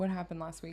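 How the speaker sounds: ordinary talk, nothing marked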